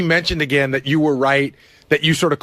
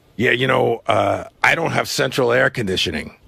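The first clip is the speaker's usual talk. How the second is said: put-on bad-sounding sick voice, lower; 4 semitones lower than usual. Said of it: "With the Artie voice?".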